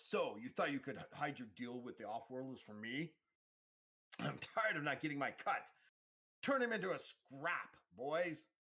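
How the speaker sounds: high, snarling, menacing voice. Narrator voicing Kova as he bursts in with his thugs, Kova snarling. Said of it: "he snarls".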